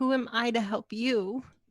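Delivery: weeping and sobbing through the words. In a dramatic role play, Katerina collapses over the chest, crying. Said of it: "collapses over the chest and starts crying".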